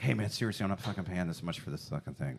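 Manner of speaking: hushed, half-whispered, under the breath. Acting out the other speaker haggling quietly: imitating someone half-whispering.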